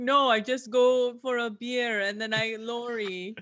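slow, drawn-out, clumsy, bad Austrian accent. Talking about playing a part in a film, bad Schwarzenegger Austrian accent. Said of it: "I love your Schwarzenegger".

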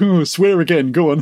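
play-acted giggling, teasing, egging-on coaxing voice. Retelling how they egged someone on to swear: imitating giggling naughty schoolboys. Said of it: "sort of giggling, going".

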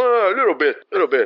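terse, sparse, barely-bothering, few-word delivery. Imitating a Robert De Niro impersonator who barely talks: imitating Robert De Niro speaking little. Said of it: "é meio só falando, tipo".

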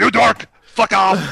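put-on slow, ground-out German accent. Quoting a film driver's line as an impression: Hitler impression. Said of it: "that was my best Hitler impression".

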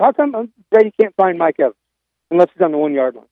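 normal talking voice

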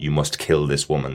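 ordinary talk, nothing marked

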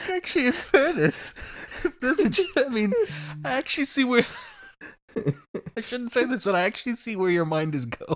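high, breathless speech choked with helpless laughter.

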